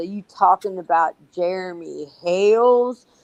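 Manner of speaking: put-on slow, drawn-out southern American accent. Retelling what a guy at the check-in asked, in a southern accent. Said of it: "he turns around with a southern accent".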